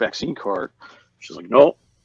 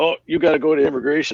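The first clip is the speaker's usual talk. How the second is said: put-on Canadian accent, pitched high; 5 semitones higher than usual. Retelling what a man at the border told him, in a put-on Canadian accent. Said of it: "not a bad Canadian accent".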